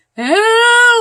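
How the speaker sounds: loud, high-pitched screaming.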